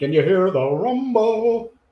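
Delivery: slow, drawn-out voice swooping up high. Showing a Ghost impression with a rumble: Ghost impression. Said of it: "it's my Ghost impression".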